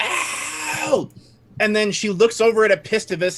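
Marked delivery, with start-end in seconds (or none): 0.0-1.1 pained shriek, higher pitch. Voicing a stabbed enemy in a game: shrieking in pain. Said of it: "and she shrieks".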